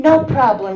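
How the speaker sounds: put-on relaxed German accent. Retelling a phone call with a sister: Rita's German accented voice. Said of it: "she says in her German accented voice".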